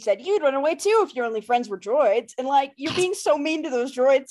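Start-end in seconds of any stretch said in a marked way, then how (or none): none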